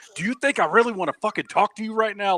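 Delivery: high, angry, fed-up, furious snap. Retelling a scene where a character snaps back after being snapped at: imitating an angry snap. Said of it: "that's how pissed he was".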